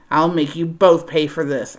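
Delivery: snarled, growled words. A man watches two people escape by cab and growls a threat. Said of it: "Holt growled".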